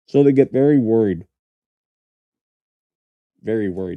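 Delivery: speaking with a mouth full of food. Speaker answering questions, talking while eating. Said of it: "So sorry that I'm eating".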